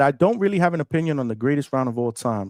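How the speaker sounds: ordinary talk, nothing marked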